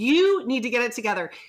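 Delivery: mock yelling. Retelling a parent yelling at a child on a sidewalk: imitating someone yelling. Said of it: "raising his voice and yelling at this child".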